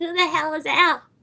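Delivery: put-on little girl voice. Voicing an eight-year-old little girl asking who Al is: little girl voice. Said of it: "my little girl voice made me sound vaguely drunk".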